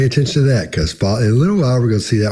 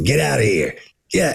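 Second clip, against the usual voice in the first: slow seal voice like an aged chain smoker; 4 dB quieter than usual. Imitating a seal answering a greeting: imitating a seal like an old smoker. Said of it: "eighty years old and has been smoking".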